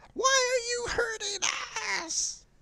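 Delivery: tiny, very high, shrill screaming voices. Voicing burning worms heard inside the heroes' heads: screaming little worm voices. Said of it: "they're just screaming in your head".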